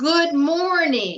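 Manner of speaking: all-out, full-effort, really loud, high yell. Leading a group exercise after counting to three: said really loudly. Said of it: "let's everybody say really loudly, as loud as you s-, can".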